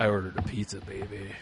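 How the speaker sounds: low, soft deepened voice. Showing how reading things in a lower voice sounds. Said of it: "read things in a lower voice".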